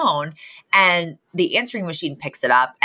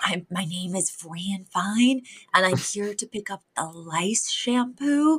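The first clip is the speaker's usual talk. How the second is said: slow, sheepish, embarrassed half-whisper; 2 semitones higher, 6 dB quieter than usual. Retelling a scene where the character is embarrassed at a pharmacy: half-whispering like Fran Fine. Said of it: "Fran whispers".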